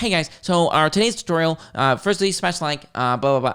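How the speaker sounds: robotic voice-assistant voice sped up to double speed. Mocking a tutorial video played at double speed: sped-up Siri-like voice. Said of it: "you sound like Siri on times two".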